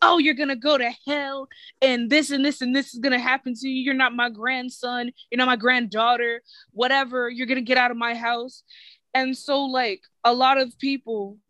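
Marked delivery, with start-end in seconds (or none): 0.0-8.6 mock angry, condemning tirade. Retelling how religious older family members react to coming out: imitating relatives yelling and screaming. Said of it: "yelling and screaming".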